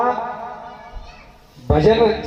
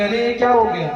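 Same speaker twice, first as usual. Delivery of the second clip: ordinary talk, nothing marked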